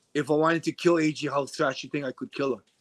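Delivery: normal talking voice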